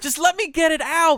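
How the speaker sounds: high, loud, slow exasperated yell. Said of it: "And I go".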